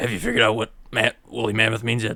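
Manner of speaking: hushed, close half-whispered aside. Leaning over to another character to ask a question: half-whispering. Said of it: "I whisper".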